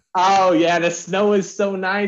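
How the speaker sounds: put-on high, poor Southern accent.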